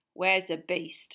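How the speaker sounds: icy, cold, unfriendly tone. Narrator reading a scene at a cabin, voicing McNair's cold voice. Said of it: "came the cold voice of McNair".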